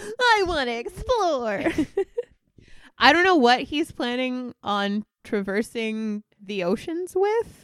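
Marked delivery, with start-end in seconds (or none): 0.2-1.6 put-on high, childish little-boy voice. Discussing a character who wants to explore, a speaker mimics how he says it: imitating a little boy. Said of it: "he says it like a little fucking boy".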